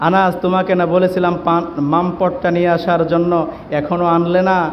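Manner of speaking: plain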